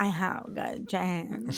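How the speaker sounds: slow, soft, breathy near-whisper. Imitating an actress's line from an ad: Sydney Sweeney voice. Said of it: "exactly what Sydney Sweeney's voice sounded like".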